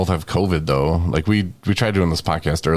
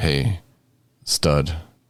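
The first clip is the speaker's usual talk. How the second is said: put-on sexy voice. Retelling calming himself down by talking to himself: imitating own sexy voice. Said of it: "Sexy voice man".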